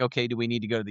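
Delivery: put-on, panicked voice. Retelling reading alarming lab results: retelling own panic. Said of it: "of course, I'm panicking".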